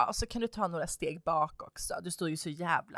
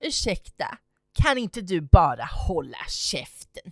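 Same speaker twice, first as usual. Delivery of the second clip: imitated rude snap, much louder; 8 dB louder than usual. Retelling how a mother told her to shut up, mimicking a rude retort. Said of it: "mother rudely tells narrator shut up".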